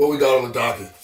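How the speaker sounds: fake deep voice. Opening the episode, the host tries out a new voice: put-on deeper voice. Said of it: "I'm going to make it a little deep like this".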